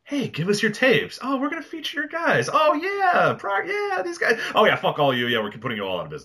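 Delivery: mocking, fake-friendly corporate voice.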